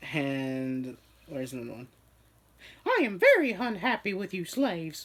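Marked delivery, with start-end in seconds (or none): 2.9-5.1 squeaky voice with pitch bouncing up and down. Reading out a man's messages aloud, in a Mickey Mouse voice. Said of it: "as I was reading it with Mickey Mouse's voice".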